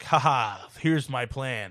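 very slow, gloating movie-villain voice. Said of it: "they're like".

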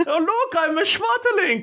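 very high caterpillar voice. Describing a caterpillar from a film, showing how he talks: A Bug's Life caterpillar voice. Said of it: "he always talks like this".

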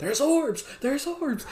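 shrill, high-pitched, repeated frantic yelling. Retelling how Dalton yelled while streaming: imitating Dalton yelling. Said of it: "he was sitting here yelling like".

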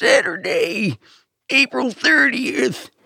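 put-on very high, creaky old man monster-truck announcer voice. Joking with another speaker about how a very old man would do it: old man doing Monster Truck voice. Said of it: "a very old man doing Monster Truck voice would be like".

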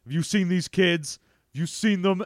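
cold, dead flat, emotionless robotic monotone. Describing a movie scene, acting out a character searching for the kids, Terminator impression. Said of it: "doing his best Terminator 2 impression".

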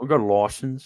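Australian accent. Joking with friends about a shooting license, in an Australian accent. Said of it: "That was actually very Aussie".

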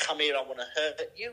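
dog voice full of menace. Contrasting a serious dog's bark with a playful one: menacing dog voice. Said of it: "you need the".

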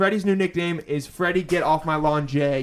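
plain

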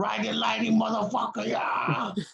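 put-on drunken screaming. Retelling how a drunk concertgoer in the crowd kept yelling: imitating a drunk guy screaming. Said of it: "he kept screaming".

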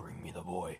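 deep, possessed, evil-sounding demonic voice. Retelling how he suddenly started talking, quoting him in a demonic voice. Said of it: "he starts talking in the most demonic voice in the world".

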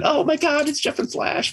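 put-on excited screaming kids' voices. Retelling a high school visit, imitating screaming kids. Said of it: "Kids would be screaming".

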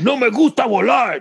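crude dub voice, very high, loud and slow.

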